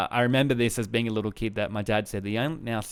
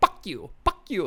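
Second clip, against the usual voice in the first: higher, parroting talking-bird voice; 8 semitones higher than usual. Imitating the pet cockatoo copying mum: Rambo the cockatoo voice. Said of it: "the bird, would be like".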